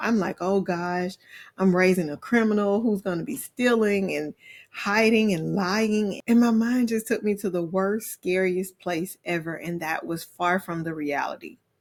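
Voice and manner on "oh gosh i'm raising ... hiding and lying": plain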